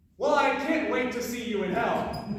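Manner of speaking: plain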